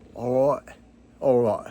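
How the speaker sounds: clumsy, terrible fake put-on British accent. Wrapping up a plug for another creator's videos: bad British accent. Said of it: "That's the worst British accent ever".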